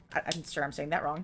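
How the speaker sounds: usual speaking voice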